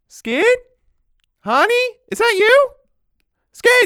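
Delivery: very high, loud, drawn-out calling out. Voicing someone inside who hears a lockpick at the back door: voice calling from inside the house. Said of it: "you hear a voice inside go".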